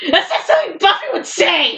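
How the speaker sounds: restrained, high yell. Recalling slamming the laptop shut over Buffy fanfiction, retelling a yell. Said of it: "slammed my laptop shut and yelled".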